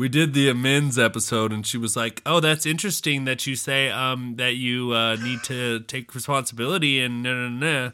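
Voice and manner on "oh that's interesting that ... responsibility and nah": small, taunting, mocking little voice. A host quotes his girlfriend's reaction to an episode; little mocking voice. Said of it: "And I use that little mocking voice".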